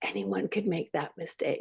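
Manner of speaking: kindly, hushed, very quiet whisper, barely audible. Retelling a kind remark a star whispered to you when embarrassed, whisper it. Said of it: "he whispers to me".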